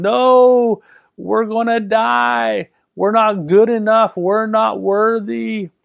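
mock frantic, high, drawn-out panicked scream. Recounting what the voice of his outward man said, retelling a screaming voice. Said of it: "I heard this screaming voice say".

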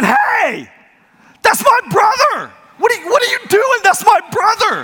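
put-on very high, swooping child's scream. Retelling pulling a boy out, the speaker voices his nine-year-old brother, imitating a kid screaming. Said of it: "is screaming at me".

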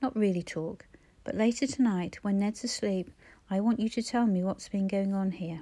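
ordinary delivery, nothing marked

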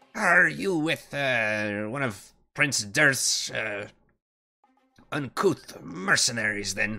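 spitting the words. The game master voices a dwarf woman answering the player, spitting the words. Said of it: "kind of spits and says".

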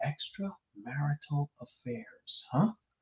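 very quiet, hushed, barely audible half-whisper. Speaker hopes certain people can't hear them; half-whispering. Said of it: "You don't have to whisper".

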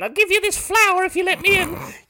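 loud haggard voice, very high-pitched. Picturing a stranger at the door offering a flower: imitating a haggard homeless person. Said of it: "some haggard homeless person there going".

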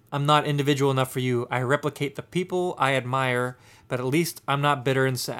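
plain

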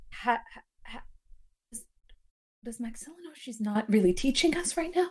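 soft, sideways mutter under the breath. Voicing a character who questions the dance teaching: muttered under her breath. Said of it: "says under her breath".

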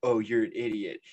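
ordinary delivery

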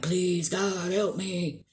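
put-on beseeching, begging, pleading cry. Retelling what he says to a woman, imitating crying out for help. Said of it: "he's crying out to her for help".

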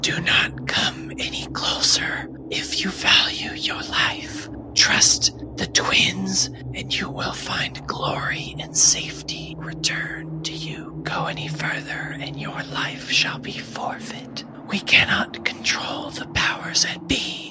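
whispered voice. The game master voices the whispers heard as the party pushes a door open. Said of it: "you start to hear those whispers again. / you start to hear those whispers again. / you start to hear those whispers again".

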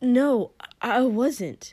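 gasping. Shoto jerks back to look at Kotsky and denies it, gasped. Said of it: "looked at him and gasped".

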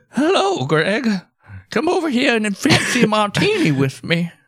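put-on very high old great-grandma voice. Voicing a character who invites a man over for a drink: great-grandma voice. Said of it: "Like a great grandma voice".

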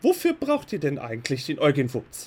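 strict, severe tone. Narrating a woman at an altar who questions the listeners without looking: stern voice. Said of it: "in immer noch strenger Stimme".

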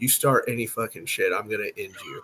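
hushed, low, menacing whisper. Retelling what one man whispered to another while shaking hands; retelling a whispered threat. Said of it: "I whisper in his ear".

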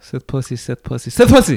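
said fast three times. Saying a tongue twister on request, said three times fast. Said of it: "Three times fast".

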